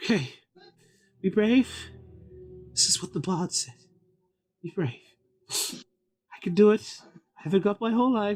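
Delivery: woman's voice, working up courage. Outside, away from the guests, [name] speaks to Darren; [name], woman's voice. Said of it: "a woman's voice figure".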